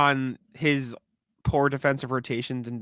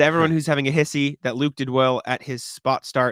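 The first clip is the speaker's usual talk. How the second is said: usual speaking voice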